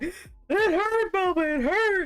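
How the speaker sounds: acted-out, high, tearful sobbing through the words. Retelling a man hugging the speaker's sister, imitating someone crying.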